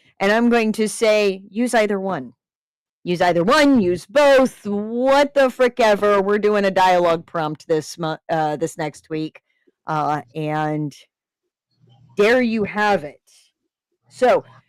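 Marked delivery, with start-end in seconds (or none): none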